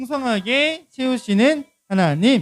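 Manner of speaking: big, loud voice, slow and deliberate.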